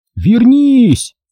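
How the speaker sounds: very high shout. Tied up, Torak calls after her as she runs off, shouted after her. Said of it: "крикнул ей вслед Торок".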